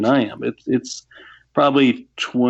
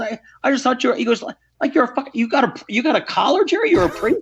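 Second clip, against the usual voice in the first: put-on thick Irish brogue, pitched higher; 13 semitones higher than usual. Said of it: "he's got this thick Irish brogue".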